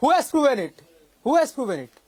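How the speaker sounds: shouting. Demanding an answer in a heated argument: shouting. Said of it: "first stop shouting".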